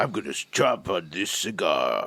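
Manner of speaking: rough, grungy, roughened-up voice. Showing the others how Pete really sounds: rough, grungy Pete voice. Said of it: "a grungier, rougher voice".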